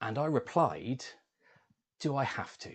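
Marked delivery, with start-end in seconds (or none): 2.0-2.7 cheeky, insolent, reluctant backchat. Recalling his reply to his mum's stern telling-off, retelling an insolent reply. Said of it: "with such insolence in my tone of voice".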